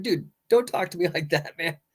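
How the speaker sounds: light, smiling delivery with a laugh.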